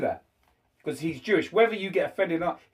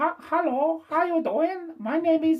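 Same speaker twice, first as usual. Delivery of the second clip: very high, slow, put-on Chinese accent; 10 semitones higher than usual. A speaker demonstrates a stereotypical Chinese voice; stereotypical Chinese accent. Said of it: "I'm gonna do Chinese voice".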